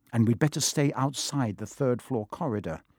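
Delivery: ordinary delivery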